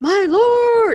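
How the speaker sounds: high, loud cry, yelled out.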